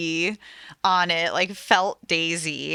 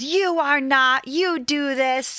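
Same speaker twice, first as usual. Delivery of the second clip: mock cross, upset, raised, pitched-up scolding tone; 7 semitones higher than usual. Retelling a quarrel about packing: imitating Christine raising her voice. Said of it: "Christine gets pretty upset and kinda raises her voice".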